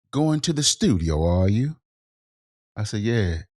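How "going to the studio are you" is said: the worst fake, put-on British accent. Retelling what a man said to him: terrible put-on British accent. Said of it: "I'm gonna use my this crowd can be the worst British accent ever".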